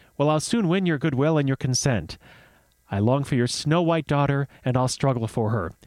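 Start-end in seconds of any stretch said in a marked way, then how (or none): none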